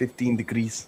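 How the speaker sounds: imitated Scottish accent. Echoing the other speaker's words back: imitating a scottish accent. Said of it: "You sounded so Scottish then".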